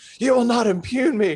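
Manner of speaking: very high, loud, furious, enraged shout. Retelling a council meeting where the mayor shouted at a member: imitating Corey shouting angrily. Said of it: "red in the face, shouting at her".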